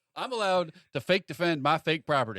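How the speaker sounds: put-on American Southern US accent. In an improvised scene, answering a question about a frozen chicken: Southern voice. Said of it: "why are you doing the South voice?".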